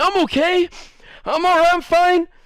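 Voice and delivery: high, tearful voice, talking through crying. Retelling a fight where the other boy insists he's fine: imitating someone crying. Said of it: "But he's, like, crying".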